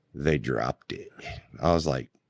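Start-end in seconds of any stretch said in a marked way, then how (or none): 0.1-1.1 put-on, smug, gloating, rubbing-it-in tone. Retelling how a grinning man looked at him: imitating someone gloating. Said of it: "Looks me dead in the eyes and goes".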